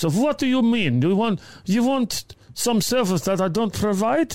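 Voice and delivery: clumsy put-on Eastern European accent. Retelling what a woman at the door said to him, in a bad put-on accent. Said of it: "You stop doing the accent".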